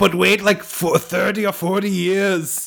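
put-on German cartoon villain accent. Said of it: "You almost sound like a G.I. Joe villain".

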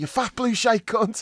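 mock, very high, loud, abusive hollering. Speaker retells a man who kept shouting abuse at the linesman, retelling shouted abuse. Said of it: "he kept shouting like Barkley".

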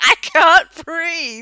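frantic, high, loud, panicked screaming. Recounting a costume mishap, the speaker reenacts screaming at Adam: retelling a panicked scream. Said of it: "I was screaming at him".

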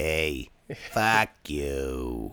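blunt, dismissive low voice with you drawn out. Showing how someone named Jim sounds: imitating Jim's voice. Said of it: "this is how he sounds".

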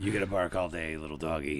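low, laughing, menacing growl, an impression.

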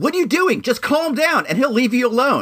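mock very high-pitched, shrill yelling. Retelling how a dog owner started at the speaker, retelling a man yelling. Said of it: "he starts yelling at me like".

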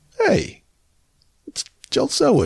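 high-pitched, starstruck fan gushing. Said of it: "I'm like".

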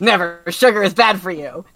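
put-on grumpy old man voice. Answering in character after being teased about hunger: grumpy angry old man voice. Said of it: "Adlai, you know, you get real angry".

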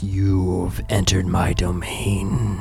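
low, very slow, drawn-out otherworldly voice. Voicing a character whose eyes roll back as he speaks: unearthly voice. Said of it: "another unearthly voice begins to come from his own mouth".

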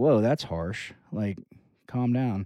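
ordinary talk

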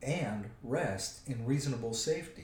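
ordinary delivery

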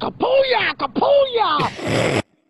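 very high, loud mock man's voice.

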